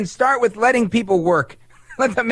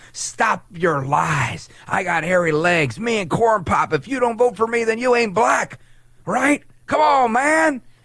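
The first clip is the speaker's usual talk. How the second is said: indignant, righteous, fever-pitch ranting; 2 semitones higher than usual. Mocking a politician who has had enough: mocking Joe Biden impression. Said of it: "Joe El Baboso Biden has had enough".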